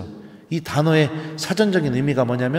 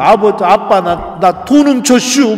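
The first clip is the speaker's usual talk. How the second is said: high, loud, wailing sobs through tears; 6 semitones higher, 9 dB louder than usual. Retelling confessing the stolen money to father, imitating sobbing. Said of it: "막 엉엉 울면서 얘기했는데".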